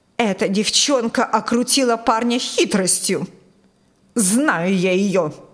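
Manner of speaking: spiteful, angry, bitter, resentful tone. A mother keeps talking to her daughter Jennifer, spiteful and angry. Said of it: "озлобленно продолжала мать".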